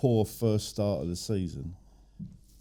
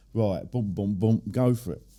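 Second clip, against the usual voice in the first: ordinary talk, nothing marked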